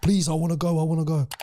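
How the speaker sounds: put-on shouting. Recalling people crowding around during an auction, retelling a crowd shouting. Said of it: "they were all crowding around me shouting like".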